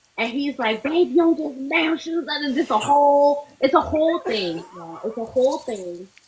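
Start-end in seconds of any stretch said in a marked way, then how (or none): 0.8-2.3 down-home Southern country drawl, pitched up. Retelling what a partner from louisiana says about shoes: imitating boyfriend's southern country accent. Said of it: "Just imagine his country ass accent".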